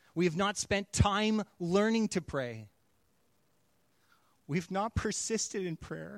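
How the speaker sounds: speaking through tears, crying. Making a personal confession about prayer, crying while speaking. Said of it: "I'm crying 'cause it's my confession".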